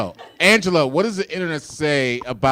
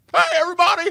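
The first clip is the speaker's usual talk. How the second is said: very high screaming call. Doing the screaming man from the Christmas movie: Jimmy Stewart voice. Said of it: "screaming in the streets".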